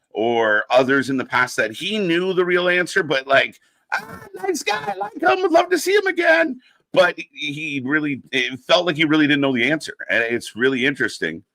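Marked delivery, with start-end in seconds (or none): 4.0-6.6 very high-pitched mock voice, dismissive. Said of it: "when Tony got asked about".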